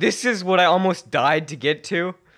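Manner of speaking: very high-pitched, very loud screaming. Retelling being screamed at after nearly crashing the car: imitating Mister Lund screaming. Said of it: "just starts screaming at me".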